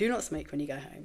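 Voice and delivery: speaking very quietly. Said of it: "she just very quietly said to me".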